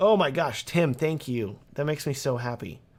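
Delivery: feeling just contained, emotion barely held back. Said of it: "trying not to get emotional".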